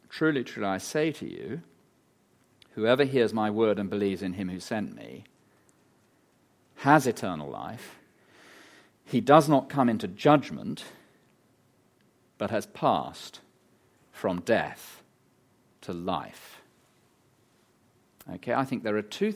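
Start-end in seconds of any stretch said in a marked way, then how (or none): 0.1-16.6 slow, deliberate reading voice. Speaker reads a bible verse aloud for listeners to work out: read slowly. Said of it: "I'll read it slowly".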